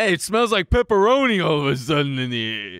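put-on New York Italian accent. Joking about Italians in a conversation: New York Italian accent. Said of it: "a New York Italian accent".

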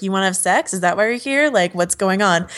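ordinary talk

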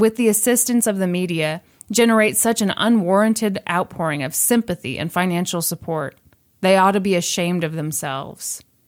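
ordinary talk, nothing marked

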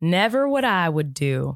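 put-on Southern accent. Imitating a three-year-old's repeated catchphrase: put-on southern accent. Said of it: "In a Southern accent".

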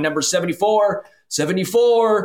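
put-on elderly, high, slow voice. Joking about a referee calling out a number like at a deli: deaf 93-year-old voice. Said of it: "Like a 93-year-old who can't hear is just sitting there going".

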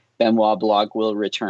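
ordinary delivery

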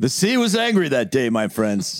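put-on sitcom-style character voice, high, swooping tune. Answering a request for Seinfeld lines with a George Costanza impression. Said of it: "that was George".

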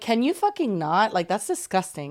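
plain

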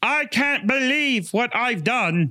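very high, slow, bad put-on British accent. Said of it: "this impression, this accent".

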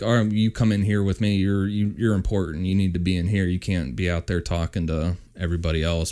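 ordinary talk, nothing marked

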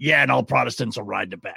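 gruff, rough-edged growling voice. Retelling what he said on air right after the ad, imitating his gruff tone. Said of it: "in his gruff tone and goes".

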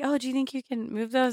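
very soft, hushed, gentle, high little voice. Retelling a passenger's question during a car trip: imitating someone speaking very softly. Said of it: "you just very softly just like".

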